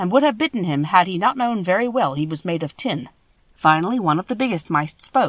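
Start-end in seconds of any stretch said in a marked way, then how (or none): none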